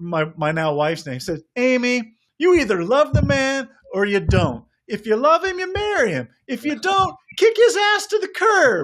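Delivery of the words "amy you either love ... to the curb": very high-pitched, cackling voice. Retelling a funny read, imitating Tony Gwynn's high-pitched voice. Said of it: "In Tony Gwynn's high-pitched voice".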